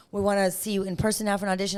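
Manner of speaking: normal talking voice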